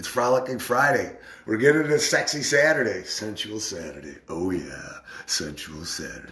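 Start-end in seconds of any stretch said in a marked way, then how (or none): 3.0-6.3 deep, low radio announcer voice, laid on. Calling out the days of the weekend, the speaker slips into a deep radio voice. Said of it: "I get the deep radio voice going on for that".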